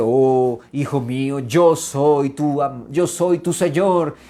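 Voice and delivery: put-on booming voice. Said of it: "una voz retumbante".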